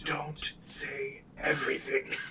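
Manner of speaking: hushed, breathy whisper. Whispering an aside to another character during the game: whispering. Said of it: "I'm gonna whisper to him".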